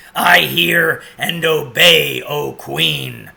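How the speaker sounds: very loud, rough, wolf-like growled voice. Reading a story aloud, the wolf answers the Queen: growling wolf voice. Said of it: "growled the wolf".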